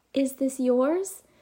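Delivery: soft, bashful, shy little voice. Narrator reads a girl bringing back the rolled-away bouncy ball; shyly. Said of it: "she shyly said".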